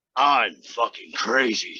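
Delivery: dead-serious, low, menacing demonic possessed voice. Retelling the same line again: imitating a menacing possessed voice. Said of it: "like Lucifer just came out of hell".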